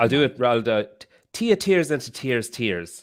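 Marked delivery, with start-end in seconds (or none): 1.3-3.0 classic put-on Irish accent, swooping and sing-song. Saying a tongue twister for the group: classic Irish accent. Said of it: "that's the classic Irish".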